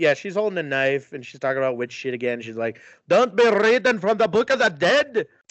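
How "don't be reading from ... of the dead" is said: put-on high-pitched voice in a Scottish accent. Recapping a movie scene, quoting Grace in a Scottish accent. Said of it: "Why is that Scottish?".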